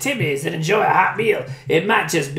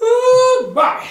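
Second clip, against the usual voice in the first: very high, loud, put-on Cajun accent; 5 dB louder than usual. The speaker shows off their cajun guy voice. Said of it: "That's my Cajun guy voice".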